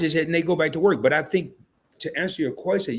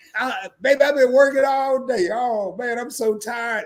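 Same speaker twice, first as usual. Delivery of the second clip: put-on exhausted complaining; 7 semitones higher than usual. Imitating a housewife who just started working, faking exhaustion. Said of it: "And they just started an hour and a half ago".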